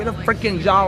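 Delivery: ordinary delivery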